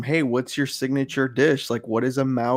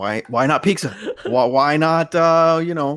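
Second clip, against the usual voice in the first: badgering, pushy, interrogating grilling tone; 4 semitones higher, 3 dB louder than usual. Acting out how Kid will answer the speaker, imitating Kid's grilling questions. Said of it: "That's my kid impression".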